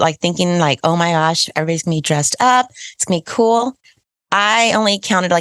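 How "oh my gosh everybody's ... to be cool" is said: normal talking voice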